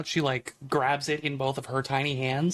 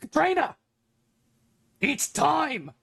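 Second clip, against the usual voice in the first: very high, loud yell, calling out; 12 semitones higher than usual. Narrating a character at the bar calling to someone behind her, yelling over her shoulder. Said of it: "She yells over her shoulder".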